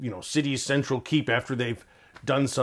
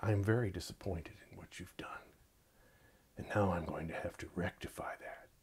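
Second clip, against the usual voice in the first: slow, soft, much quieter and lower; 7 semitones lower, 14 dB quieter than usual. Demonstrating how pacing makes listeners pay attention, slow and soft. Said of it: "slow down and speak more softly".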